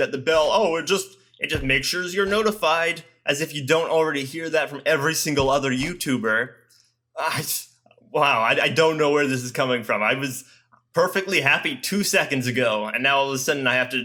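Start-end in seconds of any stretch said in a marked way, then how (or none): 0.5-3.0 condescending, patronizing, talking-down, over-explaining tone. A youtuber explaining the notification bell to viewers: condescending. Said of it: "I need to like condescendingly tell you".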